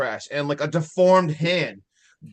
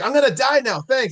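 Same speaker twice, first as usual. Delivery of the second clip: seething, fed-up, very angry raised outburst; 8 semitones higher, 4 dB louder than usual. Retelling a movie scene where a character is pissed: imitating someone super pissed. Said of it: "Super pissed".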